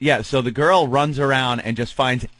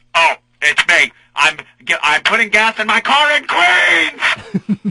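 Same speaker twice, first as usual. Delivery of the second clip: put-on very slow, swooping, rising, high drawn-out holler; 8 semitones higher than usual. Retelling a phone call made while putting gas in the car: imitating own yelling. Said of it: "Why are you yelling at me?".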